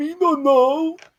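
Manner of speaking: very high, unhinged put-on crazy voice. Told his token isn't showing, the player answers in a crazy guy voice. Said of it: "What kind of voice were you doing there".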